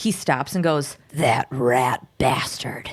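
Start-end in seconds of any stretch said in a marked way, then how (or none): 1.1-2.9 deep, low comic voice, laid on thick. Retelling a character's reaction from a TV episode: Will Arnett voice. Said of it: "In the most Will Arnett voice ever".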